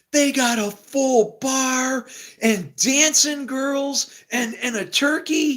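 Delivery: lit-up excited gush, very high and very slow. Retelling how he ran in after the catwalk, imitating someone lit up and excited. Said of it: "He's lit up and he's like".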